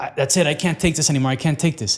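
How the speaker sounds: usual speaking voice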